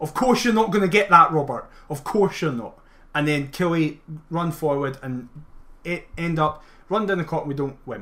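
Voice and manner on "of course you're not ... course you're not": angry outburst at full volume, loud and furious. Retelling someone's reaction when the referee doesn't give the call, imitating someone shouting. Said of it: "He just shouts".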